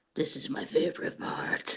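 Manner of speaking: breathy whisper, all breath. Doing an impression of Doug, saying a favorite line: Doug impression. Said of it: "My Doug impression".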